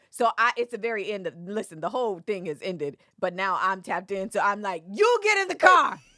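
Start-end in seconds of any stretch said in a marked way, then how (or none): 4.9-5.9 very high, loud yelling. Retelling telling someone to get in the car: retelling own yell. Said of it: "And I'm yelling it from inside the sprinter".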